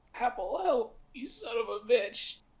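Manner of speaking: very high, barely audible, hushed tiny voice. In the game, Arn calls out to Apple unheard by the others: Arn's voice no one could hear. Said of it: "in a very voice that no one else could hear".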